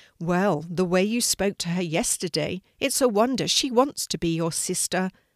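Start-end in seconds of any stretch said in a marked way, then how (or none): none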